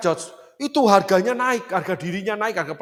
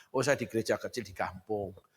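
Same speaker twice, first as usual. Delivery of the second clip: very quiet, hushed, somewhat sad tone; 12 semitones lower, 12 dB quieter than usual. Acting out someone asked about their church, imitating a somewhat sad tone. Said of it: "Dengan nada agak sedih".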